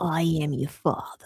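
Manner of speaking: soft, low, mystic whisper.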